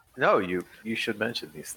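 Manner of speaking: loud, theatrical stage whisper, like an audible aside. Playing a character speaking quietly to a companion, in a stage whisper. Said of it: "they're stage whispering".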